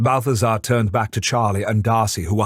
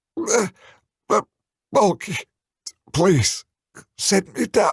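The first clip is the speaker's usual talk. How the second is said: high, strangled croaking voice; 10 semitones higher than usual. Reading a story aloud; Charlie, held up by the throat, speaks: croaking voice. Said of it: "Charlie croaked out".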